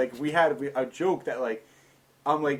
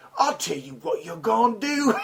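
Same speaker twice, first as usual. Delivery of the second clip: put-on high-pitched, lower-class working-class British accent; 7 semitones higher than usual. Imitating a big british actor's movie lines: lower class british accent. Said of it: "a lower class British".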